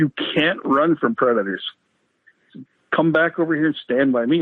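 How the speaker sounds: normal talking voice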